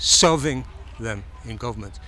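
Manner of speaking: serving pressed hard with falling pitch.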